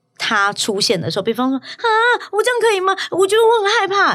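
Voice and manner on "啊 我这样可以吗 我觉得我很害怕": put-on very high, milky, doll-like baby talk. Retelling how another person sounds when acting childish: imitating a babyish voice. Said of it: "他会变成有奶音跟娃娃音".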